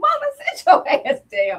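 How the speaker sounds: mock very high, shrill, loud yell. Retelling a family member shouting at a funeral: imitating a loud shout. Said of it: "just shouted out loud".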